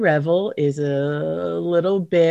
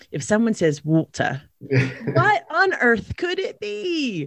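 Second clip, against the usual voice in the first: very slow, sing-song, swooping English accent; 6 semitones higher than usual. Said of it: "that was a good English accent".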